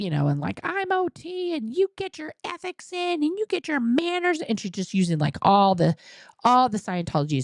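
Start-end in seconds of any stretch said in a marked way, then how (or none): 0.6-4.4 put-on scream, higher pitch. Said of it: "she started screaming at me".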